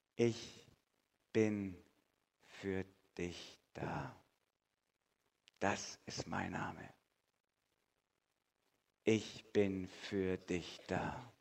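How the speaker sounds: soft, slow, tender and solemn delivery.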